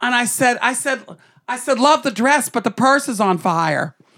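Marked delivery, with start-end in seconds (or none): none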